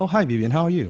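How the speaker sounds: gentle, friendly tone. In a role-played sales phone call, greeting the caller back, in a softer tone. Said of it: "changing my tone already to be softer".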